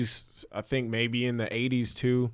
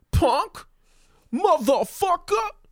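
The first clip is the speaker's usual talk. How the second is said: very high, dead-on mimicked famous voice; 5 dB louder than usual. Retelling an engineer coaching a line: Tracy Morgan impression. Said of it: "spot on Tracy Morgan impression".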